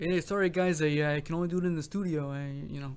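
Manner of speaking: put-on generic Swedish accent. Picturing Dan Sueno doing that live, in a generic Swedish accent. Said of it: "that's my generic Swedish accent".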